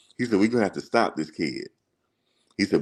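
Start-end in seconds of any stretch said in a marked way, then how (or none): 0.4-1.7 put-on country accent. Retelling what a coach said at halftime about a rival player, imitating his country accent. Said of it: "he had the real country accent".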